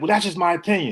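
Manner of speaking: put-on very aggressive, hostile, combative tone. Describing a guy who loses arguments, mock-aggressive retort. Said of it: "he'll say it very aggressively".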